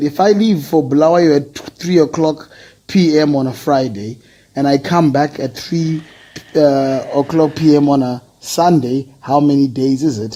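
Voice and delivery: ordinary talk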